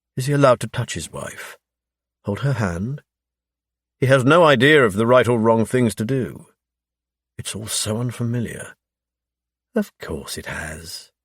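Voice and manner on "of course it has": hushed, very soft, slow, drawn-out cooing voice. Reading a nurse's reassuring line in a story: cooing. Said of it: "Leanne coos".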